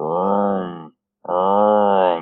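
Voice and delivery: low mock engine revving vroom.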